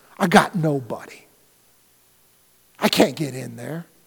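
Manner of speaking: very low, soft, worn-down, defeated, hopeless voice. Describing a man who lost hope over four decades, imitating a hopeless man. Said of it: "You can hear it in his voice".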